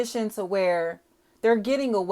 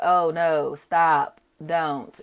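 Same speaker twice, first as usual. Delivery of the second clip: very slow, low, drawn-out sarcastic fake alarm; 5 semitones lower than usual. Describing a Willy Wonka scene where a kid won't listen, mock-sarcastic Willy Wonka quote. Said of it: "all sarcastic".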